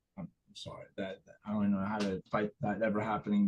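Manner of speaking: mumbled quietly under the breath.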